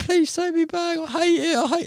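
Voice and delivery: very high, mock-tearful fake sobbing. Joking about begging to be taken back: mock crying, pleading. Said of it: "crying my eyes out".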